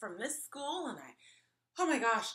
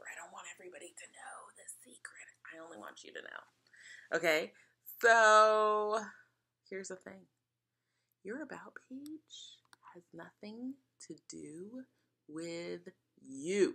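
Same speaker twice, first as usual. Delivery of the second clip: playful mock whisper, lower pitch; 3 semitones lower than usual. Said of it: "'cause I have to whisper".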